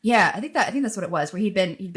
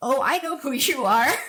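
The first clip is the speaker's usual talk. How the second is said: tiny, high, squeaky little voice; 7 semitones higher than usual. Retelling how a man reacted on recognizing the speaker, imitating a squeak. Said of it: "he squeaked".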